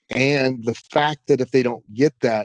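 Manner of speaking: normal talking voice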